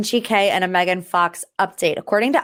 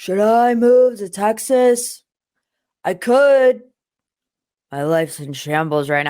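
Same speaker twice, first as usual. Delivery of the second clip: mumbled delivery, words half-swallowed. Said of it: "Let me try to do my best [name] impression".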